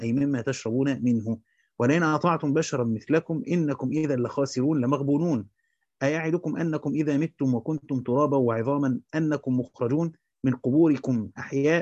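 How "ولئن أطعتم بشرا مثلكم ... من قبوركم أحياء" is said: plain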